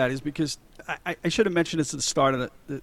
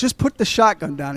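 ordinary talk

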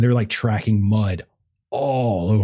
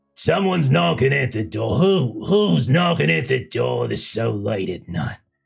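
put-on gravelly, creaky, raspy old woman voice; 3 semitones higher than usual. Voicing Marge in a story as someone knocks late at night: Marge's gravelly old voice. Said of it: "the sounds of Marge's gravelly old voice".

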